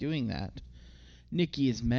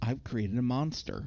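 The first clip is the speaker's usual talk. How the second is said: normal talking voice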